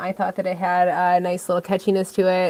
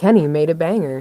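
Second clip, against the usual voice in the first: put-on automated announcement robot voice; 2 semitones lower, 5 dB louder than usual. Confirming that someone made a banger track: put-on automated voice. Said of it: "when you do the automated voice".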